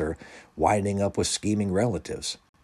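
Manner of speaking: ordinary delivery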